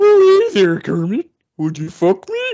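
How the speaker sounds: puppet-show character voice. Speaker pictures Beauregard as Buffalo Bill in a Muppet Silence of the Lambs; Beauregard voice.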